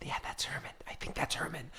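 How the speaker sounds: very quiet, breathy, hushed whisper. Voicing someone in a lecture audience who spots Herman: whispering.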